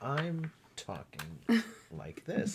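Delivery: whispery, slow, breathy, overly composed calm tone. Joking about how one person seems too calm: imitating Cameron, calm and collected. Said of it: "Cameron seems too calm and collected".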